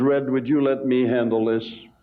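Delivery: said very quietly. During a timeout, speaker retells what he said to him, very quietly. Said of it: "he says to me very quietly in his manner".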